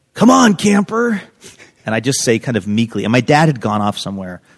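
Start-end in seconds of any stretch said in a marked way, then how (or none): 0.2-1.2 very high, carrying shout, as if called from afar. Recalling a camp counselor yelling over at him: imitating a counselor yelling. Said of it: "one of the counselors yells over at me".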